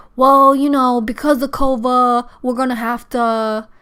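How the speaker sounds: put-on thick, wild Philadelphia accent. Retelling a call with a doctor's receptionist, heavy Philly accent. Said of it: "her Philly accent was like so wild".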